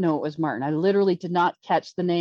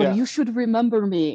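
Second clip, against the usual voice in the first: put-on French Canadian accented English; 4 semitones higher than usual. Retelling what a man named Martin said to you: imitating Martin Lemire's accent. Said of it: "he's got his French French Canadian accent".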